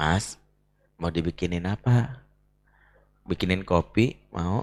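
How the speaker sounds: low, soft, sweet, teasing voice.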